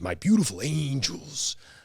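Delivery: macho, high, swooping wrestler voice. Thanking supporters, switching into a Macho Man Randy Savage voice. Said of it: "into a, a macho man Randy Savage".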